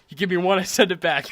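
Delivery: loud, laughing, words breaking into laughter. Describing an ideal bagel order, quoting a line: laughing while talking. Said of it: "I couldn't even say that without laughing".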